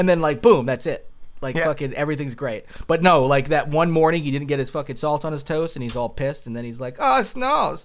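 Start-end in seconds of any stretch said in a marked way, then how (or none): 7.0-7.9 really bad German accent, very high pitch. Speaker quotes a man angry about his breakfast, in a bad german accent. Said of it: "That's a really bad German accent".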